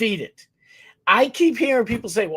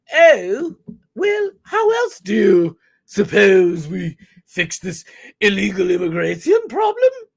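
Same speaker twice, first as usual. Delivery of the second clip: put-on British accent; 3 dB louder than usual. Retelling what other people said to him, in a british accent. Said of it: "I'll do a British accent".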